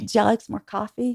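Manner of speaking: put-on cute small-town Southern accent. Recalling moving from Memphis to New York: cute Southern accent. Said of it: "I used to have a cute little Southern accent".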